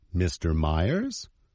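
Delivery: Myers lifted with rising intonation. Acting out how she says his name: rising question intonation on Myers. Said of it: "She says his name as if it were a question".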